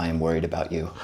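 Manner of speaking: dry, expressionless deadpan in a very low voice. Retelling what a man said on learning they lived in Seattle, imitating his deadpan, very low voice. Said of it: "he's very deadpan, very low voice".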